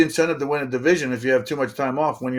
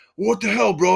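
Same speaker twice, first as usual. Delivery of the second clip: pitched-up, blustering pro wrestler promo style; 7 semitones higher than usual. Retelling what a traded teammate said, imitating Sean Casey like a WWF wrestler. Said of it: "you know how he talks like a W W F wrestler".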